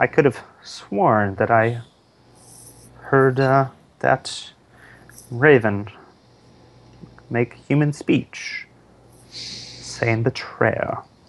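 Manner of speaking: quiet, hushed tone. Speaking in character to the knights so only they hear: low voice. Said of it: "to the knights in a low voice".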